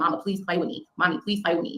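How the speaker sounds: put-on child voice, begging and pleading. Retelling a little girl asking her mother to play: imitating a child begging. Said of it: "that's begging for your attention".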